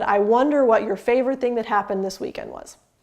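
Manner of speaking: statement tune, falling tone on final was. Showing an 'I wonder' statement, not a question: falling tone on final 'was'. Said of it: "You end on a down tone, so it's very clear it's a statement".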